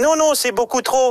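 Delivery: tiny, high-pitched little voice. Retelling negotiating a loan at the bank, in the Caisse d'Épargne squirrel voice. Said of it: "avec sa petite voix".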